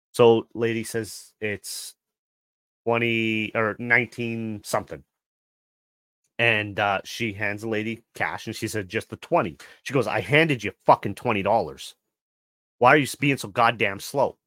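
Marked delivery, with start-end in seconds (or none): 10.1-14.3 put-on rude, complaining voice. Retelling a customer complaining to a slow cashier about her change, mimicking a rude customer. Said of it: "you don't have to be rude".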